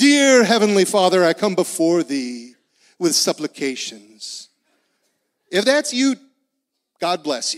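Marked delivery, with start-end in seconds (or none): 0.0-4.5 put-on grandiose, lofty, formal churchy prayer voice. Acting out a prayer in old formal words: mock lofty formal prayer. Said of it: "Then pray like that".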